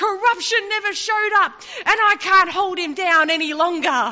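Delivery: high-pitched, loud screaming. In a retold story, Death answers Satan back, Death screaming. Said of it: "death screams back at Satan and says".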